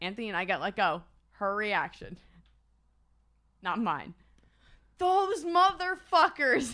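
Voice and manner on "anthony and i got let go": ordinary talk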